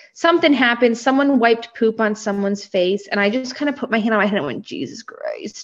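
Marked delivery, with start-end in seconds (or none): 4.7-5.7 mock mutter, lower and quieter. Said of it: "kind of under".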